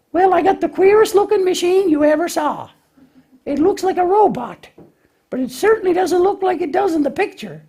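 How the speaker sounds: very high, puzzled lamb puppet voice. Lambie tries putting something together without following directions, Lambie puppet voice. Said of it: "Lambie tries to put something together without following directions".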